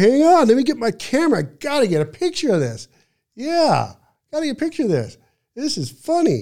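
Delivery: very high, loud, giggling, laughing chatter. Retell a man finding it hysterical and wanting a picture while you freak out, imitating someone laughing. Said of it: "Danny is laughing. He's going".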